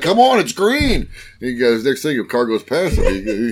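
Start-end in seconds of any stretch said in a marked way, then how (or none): 0.0-1.1 acted-out, very high-pitched, impatient, drawn-out yell. Retelling a driver honking and yelling at a car not moving on green: retelling a driver yelling. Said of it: "starts honking the horn and starts yelling at the guy".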